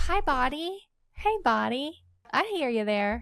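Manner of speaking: kind, tender, soothing, slow sing-song tone. Demonstrating talking to one's own body, soft, gentle voice. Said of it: "this gentle voice, like, ... I had to start using that on myself".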